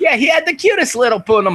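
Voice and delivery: put-on very high old woman voice.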